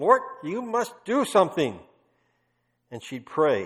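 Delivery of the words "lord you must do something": put-on bold, raised, pitched-up Dutch accent. Speaker retelling how Corrie boldly prayed before the Lord, Corrie's Dutch accent. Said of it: "That was her Dutch accent".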